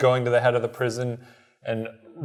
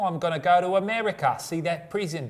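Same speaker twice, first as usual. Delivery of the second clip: put-on unintended Australian accent creeping in, pitched up; 7 semitones higher than usual. Imitating Charles Dickens but the voice comes out Australian. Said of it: "why is that Australian?".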